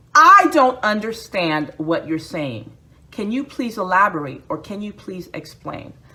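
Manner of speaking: ordinary delivery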